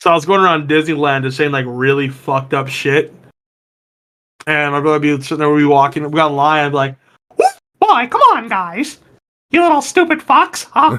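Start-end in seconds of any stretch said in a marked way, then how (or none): 7.4-11.0 squeaky voice, high-pitched and slow. In line at Disneyland with their brother, the speaker does a Mickey Mouse impression. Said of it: "I do a pretty decent like Mickey Mouse impression".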